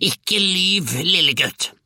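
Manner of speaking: high, shrieking, screeching witch voice. The huge old witch grandmother cuts Georg off, shrieking. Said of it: "hylte den enorme gamle heksa".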